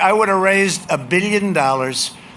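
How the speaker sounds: ordinary delivery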